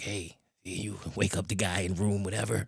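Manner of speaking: whispered, quiet voice. Retelling a wake-up call they made, whispering. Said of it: "Now I'm whispering on them".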